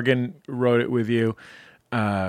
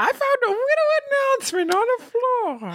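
put-on very high, babyish baby voice. Host playfully presenting an announcement to listeners, baby voice. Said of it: "I knew this was going to go to baby voice".

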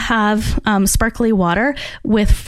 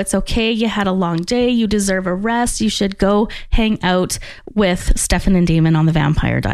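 plain

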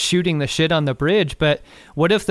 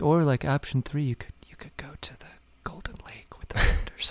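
muttered under the breath, much quieter; 9 dB quieter than usual. Recapping an episode, voicing one character's aside, retelling a mutter under the breath. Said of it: "under his breath".

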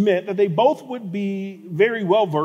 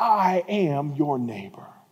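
feeble, weak, low, faint voice; 5 semitones lower, 6 dB quieter than usual. The man lying on the road, watching a priest pass by, weak voice. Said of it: "what you might hear him say in a weak voice is".

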